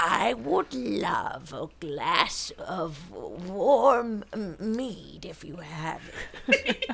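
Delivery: put-on bear voice, warm and drawn out. Offered a drink in a role-play, the speaker answers in bear character voice. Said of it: "find this fucking voice of this bear".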